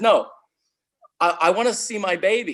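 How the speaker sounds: stubborn, firm, pressing, insistent tone. Retelling her sister finally getting insistent with the nurse, retelling an insistent demand. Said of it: "she finally gets insistent".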